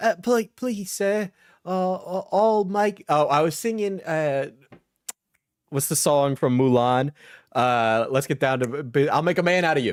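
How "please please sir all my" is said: poor English orphan voice. Retelling a bit done while hosting a session: Oliver Twist impression. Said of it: "doing like an Oliver Twist one".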